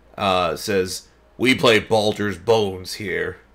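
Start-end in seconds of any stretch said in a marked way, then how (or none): 1.4-3.4 borrowed, overly gruff put-on voice. Narrating a Kenku that speaks in an unfamiliar voice, way too gruff for it. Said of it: "sounds like way too gruff for the Kenku".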